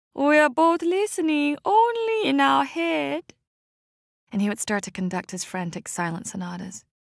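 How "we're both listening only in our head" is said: very high, slow, drawn-out shouting. Narrator recalls a deaf old piano teacher speaking to the narrator, shouting as Old Chong.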